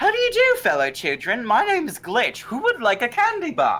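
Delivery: put-on very high, swooping, overly polite accent. Voicing the character Glitch, greeting fellow children, in a polite accent. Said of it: "I like how polite that accent comes out".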